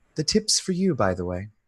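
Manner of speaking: very soft, hushed, private murmur. A departing character speaks privately to Annie as they drive off, very soft voice. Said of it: "in a very soft voice that that only you can hear".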